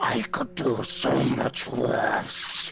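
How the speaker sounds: warped, gravelly, rough, creaky, messed-up character voice. Voicing a character in a role-play scene, in a messed-up voice. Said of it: "try my more fucked up voice and says".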